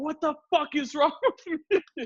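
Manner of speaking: mock shrill, very high, top-of-lungs screaming rant. Retelling driving home after a date: imitating own screaming. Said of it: "I'm fucking screaming at the top of my lungs".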